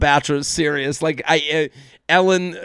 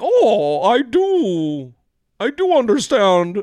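"do" drawn out, pitched high with a swooping tune; 5 semitones higher than usual. Retelling what Gary said, in a Kermit the Frog voice. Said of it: "Kermit the Gary was like".

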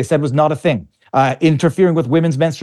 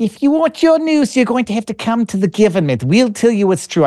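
put-on terrible, clumsy New Zealand accent, pitched higher; 7 semitones higher than usual. Criticizing a government, doing a terrible Jacinda Ardern accent. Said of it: "I'm doing a terrible accent".

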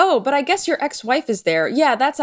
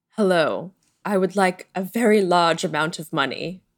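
put-on sexy, seductive British accent; 4 semitones lower than usual. Narrating a remembered film scene as the villain enters with henchmen, Alan Rickman impression. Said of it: "Ooh, sexy voice".

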